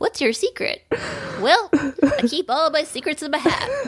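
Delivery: gnome voice. Chatting about a gnome book, the speaker answers as a gnome in a gnome voice. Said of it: "Your gnome voice just sent me".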